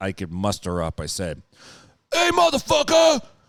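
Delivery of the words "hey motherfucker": very loud, very high, would-be manly tough-guy yell. Retelling calling out to someone in the yard: retelling own manliest shout. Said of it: "in my manliest voice I could".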